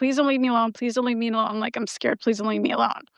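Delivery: put-on quick, hushed, frightened, desperate tone. Recalling begging her mom not to leave her alone, retelling her begging. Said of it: "I begged her".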